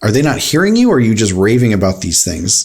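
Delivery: ordinary delivery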